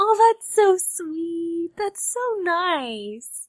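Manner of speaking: crying through the words, tearful, with drawn-out nice. Reacting to recorded birthday messages, crying while talking. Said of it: "I can't stop crying".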